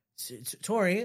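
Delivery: ordinary delivery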